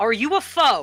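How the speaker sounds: calling out very loudly. In a tabletop game, the narrator voices a character spotting a newcomer; very loud. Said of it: "and says very loudly".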